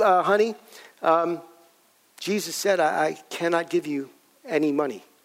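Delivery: hesitant, halting, faltering, stop-start words. Retelling refusing a daughter money on the phone: retelling own hesitant words. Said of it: "I hesitated".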